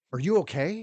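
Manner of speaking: acted, very high, flustered and out of breath. Retelling how a landlord came to the door: imitating a flustered, breathless landlord. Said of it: "he's flustered, and he's breathing heavy".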